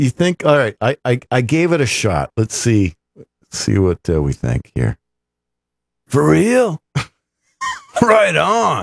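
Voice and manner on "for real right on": put-on much higher, slower, excited, eager stoner voice. Voicing a character for a recording to be sent off, in an excited stoner voice. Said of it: "need an excited stoner voice".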